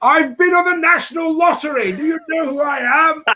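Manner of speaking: acted, very high-pitched, shrill screaming. Retell being put in a cubicle with drunk Hungarians, acting out your own past screaming. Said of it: "and I was screaming".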